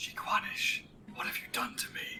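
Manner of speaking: hushed, breathy, barely voiced whisper. In character during a game transformation, whispering under breath. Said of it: "I whisper under my breath".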